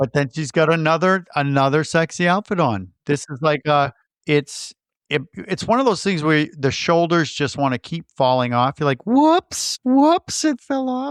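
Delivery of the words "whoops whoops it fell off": very high, slow, goofy put-on silly voice. Describing a woman's outfit slipping off her shoulders, in a put-on voice. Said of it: "I don't know why I'm doing that voice".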